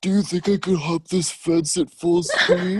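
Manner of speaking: put-on very high, loud old geezer voice. Speaker imagining himself in an old man's body, talking in an old man voice. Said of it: "talking my old man voice".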